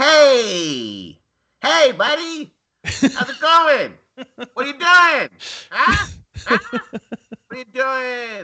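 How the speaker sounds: invented Buffalo accent. Having promised to learn a Buffalo accent, making one up instead: made-up Buffalo accent. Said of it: "I did promise to learn a Buffalo accent".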